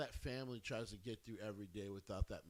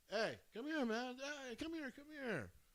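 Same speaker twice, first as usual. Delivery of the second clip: mock very high, perky, perked-up voice. Retelling a story of walking in on Bray Wyatt: imitating him perking up. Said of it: "And he would perk up".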